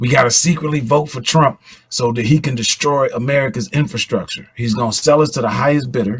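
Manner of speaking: hushed, conspiratorial, secretive half-whisper. Speaking on the radio, trying not to be cut off: half-whispering. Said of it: "I'm trying to whisper so they don't cut it off".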